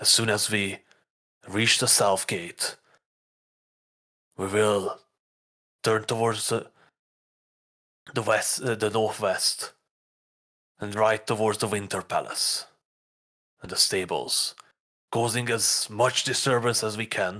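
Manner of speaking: secretive, conspiratorial tone. Voicing Bane giving a plan in a dark basement: hushed voice. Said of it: "in a hushed voice speaks".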